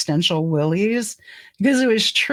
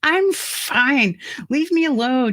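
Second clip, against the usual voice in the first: higher, mock slurred, drunk-sounding words run together; 7 semitones higher than usual. Retelling answering a husband during a stroke: imitating own slurred speech.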